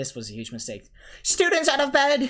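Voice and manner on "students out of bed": shrill, booming, very high, very loud alarmed bellow. Narrator voices Peeves after Ron swipes at him: bellowing. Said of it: "Peeves bellowed".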